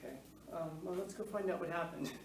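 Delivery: relaxed, easy, totally unbothered calm. Acting out Gouveia answering news of a bombing, imitating Gouveia's laid-back calm. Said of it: "He was just so laid back".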